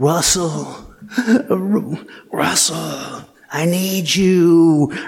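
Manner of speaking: put-on devilish hissing whisper. Retelling a friend calling out at night: imitating a devilish hiss whisper. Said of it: "like a devilly hiss whisper".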